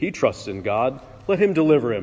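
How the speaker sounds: ordinary delivery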